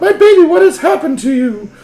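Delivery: shrill, blaring lady voice, very high and very loud. Narrating a mother seeing her son's cuts and bruises, put-on lady voice. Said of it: "I can't do lady voice very good".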